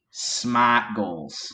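very thick Boston accent, no r in smart. Suggesting an episode title, thick Boston accent. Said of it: "very thick Boston accent".

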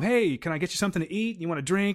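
acted super calm voice. Retelling a film scene, acting the character's offer: imitating a super calm host. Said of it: "super calm".

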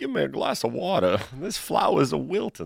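soft, laid-on Cajun southern drawl. Mocking how Brian Kelly talked after going to LSU, in a Brian Kelly Cajun drawl. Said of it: "adopt like a Cajun Southern drawl".

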